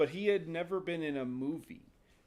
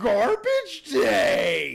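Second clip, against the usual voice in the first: very loud, booming, high, full-lung top-of-lungs holler; 7 semitones higher, 12 dB louder than usual. Retelling how an extra shouted at a man with trash: imitating a full-lung shout. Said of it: "shouts at the top of his lungs".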